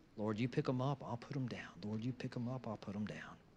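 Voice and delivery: soft, mumbled, repeated words.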